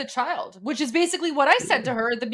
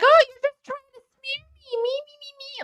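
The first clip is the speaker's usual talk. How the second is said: mock, very high, self-pitying, whiny victim voice; 13 semitones higher than usual. Retelling what she says in the clip: mocking imitation of playing the victim. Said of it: "she's basically playing the victim, and she's like".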